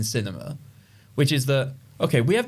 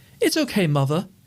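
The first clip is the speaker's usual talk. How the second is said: put-on over-the-top British accent; 4 semitones higher than usual. Describing the sinister children in a scene, stereotypical british accent. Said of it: "they have like the very stereotypical like British accents".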